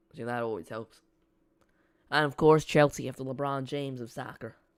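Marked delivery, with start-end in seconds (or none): 2.1-4.6 terrible, clumsy fake American accent. Commentating a Chelsea–Man City match, making a running joke: terrible American accent. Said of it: "with my terrible American accent".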